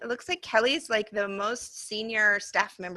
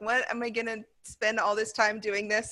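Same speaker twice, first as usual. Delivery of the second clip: ordinary delivery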